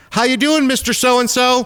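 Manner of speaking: play-acted, full, loud, very high-pitched booming giant voice. Speaker mimicking doctors and nurses checking a neighbouring patient at 3 a.m.: full, loud voice. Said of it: "talk in a full, giant, loud voice".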